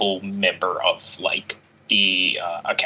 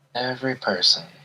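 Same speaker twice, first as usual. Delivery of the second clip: mimicked mutter, much higher; 4 semitones higher than usual. Speaker describes how a man said it to people: retelling a mutter under breath. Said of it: "and just under his breath".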